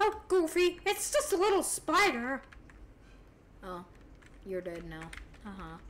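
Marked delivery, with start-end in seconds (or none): 0.0-2.4 high, squeaky voice. Saying they can do cartoon voices, the speaker does a Mickey Mouse voice. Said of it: "I can make, like, a Donald Duck voice or a Mickey Mouse voice".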